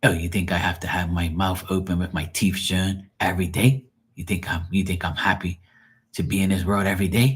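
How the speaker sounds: mock aggravated, dramatic woman's voice. Retelling what she says when aggravated: imitating an aggravated woman. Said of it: "When she's aggravated, she'll act like that".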